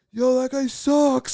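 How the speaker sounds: rowdy, high-pitched, drawn-out jeering yell. Retelling yelling comments during a movie as kids: imitating kids yelling at a movie. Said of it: "yelling, like".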